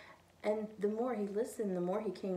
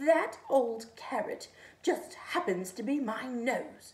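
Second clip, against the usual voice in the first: offended, growling, slow, loud and angry snarl; 3 semitones higher, 5 dB louder than usual. A narrator reads the angry snowman answering the rabbit, snarling. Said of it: "he snarled".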